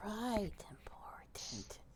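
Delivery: whispered, soft, breathy under-the-breath mutter. Voicing a character's reply to a request: muttered under her breath. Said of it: "she says under her breath".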